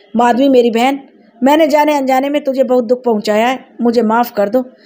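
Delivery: ordinary delivery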